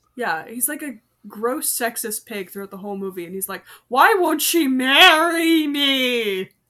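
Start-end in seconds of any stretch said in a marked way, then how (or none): 3.9-6.5 grating, annoying put-on voice, very loud and very slow. Describing a sexist movie character to friends, in an annoying put-on voice. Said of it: "I use that voice specifically to annoy Hector".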